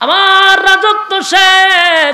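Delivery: high, loud, slow anguished cry.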